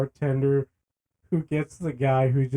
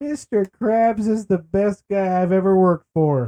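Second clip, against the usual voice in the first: gushing, high, loud, drunken cartoon voice; 6 semitones higher, 5 dB louder than usual. Retelling a cartoon scene, quoting the character: imitating drunk SpongeBob. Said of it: "Drunk SpongeBob".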